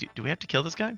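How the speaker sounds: hushed whisper. Player whispers to a party member walking up to them: whispering. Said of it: "I whisper to Osis".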